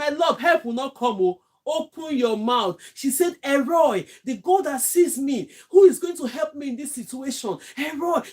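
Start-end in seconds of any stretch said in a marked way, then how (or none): 3.4-8.2 mock-shouting, acted-out shout. Speaker retelling a woman crying out to god, imitating her shouting. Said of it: "She was shouting".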